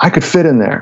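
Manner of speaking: put-on snotty, bratty little kid voice. Speaker retells Jeff by his dad's empty suitcase: imitating Jeff's bratty voice. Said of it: "in his little bratty ass voice".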